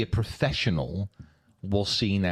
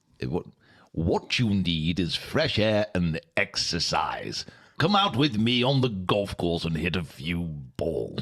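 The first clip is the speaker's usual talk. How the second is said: put-on elderly British gentleman's voice. Asked to read a minister's quote aloud, the speaker does Frank Wheeler, old British man's voice. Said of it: "could you do an old British man's voice".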